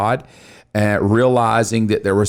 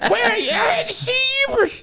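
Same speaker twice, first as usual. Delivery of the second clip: put-on woman's voice, pitched very high. Acting out what a woman said, in a put-on woman's voice. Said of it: "That's the best woman voice I got".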